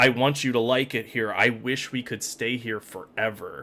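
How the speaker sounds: ordinary talk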